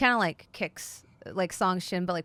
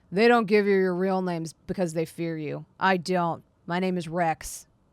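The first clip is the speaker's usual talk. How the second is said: put-on loud, growly grumble like a grumpy old man; 5 dB louder than usual. A character puts his pack back on and gives his name: Rex's grumpy-old-man grumble. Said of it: "grumbles and growls a little bit like a grumpy old man".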